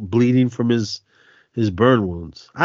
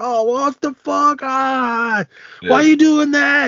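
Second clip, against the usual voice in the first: put-on yelling, higher; 3 dB louder than usual. Retelling moviegoers in Oakland, imitating someone yelling at the screen. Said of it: "Everybody talking to the screen".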